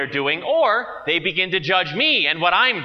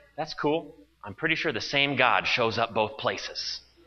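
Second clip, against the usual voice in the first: secretive, hushed, low, confiding half whisper; 6 semitones lower, 8 dB quieter than usual. Retelling their reply to someone who names their church, in a half whisper. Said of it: "in a half whisper, like I shouldn't be saying it".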